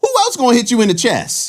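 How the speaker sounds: very high-pitched put-on different voice. Retelling being elbowed in the chest: imitating ex-girlfriend's voice. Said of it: "That was a different voice that you made".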